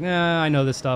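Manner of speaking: plain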